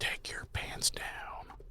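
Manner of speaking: breathy, creepy whisper.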